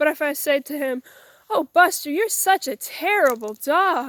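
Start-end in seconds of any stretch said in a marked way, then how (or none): 1.5-4.1 doting, fond, approving praising tone. Showing a class how tone changes meaning, speaking to a dog: praising tone. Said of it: "he would probably think I'm praising him".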